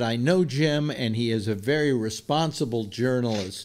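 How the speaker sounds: ordinary delivery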